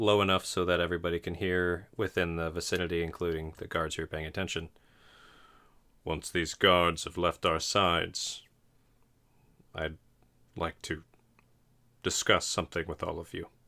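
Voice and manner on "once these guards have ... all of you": deep, low, masculine-sounding voice. Voicing a chained prisoner speaking to the group: low manly voice. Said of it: "in this low-ass manly voice".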